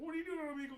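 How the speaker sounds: high, loud cartoon frog puppet voice. Retelling how an online prankster greeted people: Kermit the Frog voice. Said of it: "his shtick was he was Kermit the Frog".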